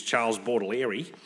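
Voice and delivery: Australian pronunciation. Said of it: "for us Aussies".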